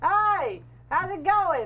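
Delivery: loud, high, drawn-out Australian accent. Comparing accents with others, the speaker demonstrates a loud australian accent. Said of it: "an Australian accent can be more like can be very like".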